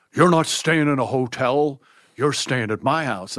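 put-on big, booming, loud, bombastic voice. Retelling phoning Bill to ask about hotels, imitating Bill's bombastic voice. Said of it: "Bill in his bombastic voice".

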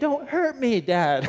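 mock drawn-out, very high child's scream. A father recounts his son screaming while being held, imitating son screaming. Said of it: "he's screaming".

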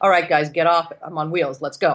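normal talking voice

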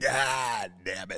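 put-on gruff actor voice. Doing a one-word impression of Nick Nolte saying his catchphrase. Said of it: "That was a pretty good impression right there".

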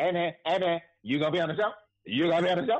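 brash, cocky, very high voice. Retelling a man asking about the show while getting jamaican food: imitating a cocky guy. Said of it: "and he all cocky".

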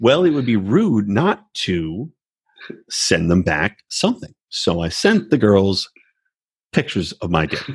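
slow, drawn-out, steady sociopathic cadence. Imitating Colt again, slow cadence: slow imitation of Colt. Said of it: "he's so slow".

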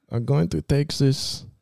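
Swedish-accented voice. Co-hosts discussing bandmates from different countries; one tries a moderate Swedish accent. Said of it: "That's a moderate Swedish accent".

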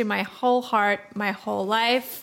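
ordinary talk, nothing marked

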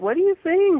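high, loud, baffled tone. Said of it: "their parents are going".

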